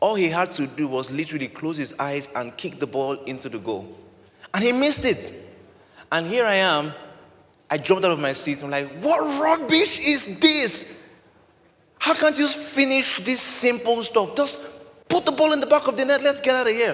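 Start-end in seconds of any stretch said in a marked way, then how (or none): 9.0-16.9 mock very high, loud outburst of shouting. Retelling jumping up at a missed open goal: retelling own shouting. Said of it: "why are you shouting?".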